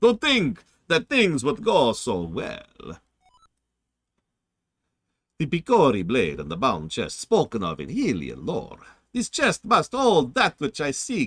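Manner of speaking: put-on vampire voice with swooping pitch. Reading a game character's lines aloud, vampire voice. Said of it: "I gotta get my vampire voice going".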